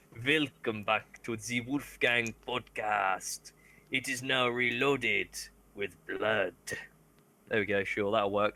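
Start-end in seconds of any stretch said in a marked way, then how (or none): 0.3-6.5 slow, drawn-out vampire count voice. Speaker records an intro for the Wolfgang podcast: Dracula voice. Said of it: "I want to do an intro that's like Dracula".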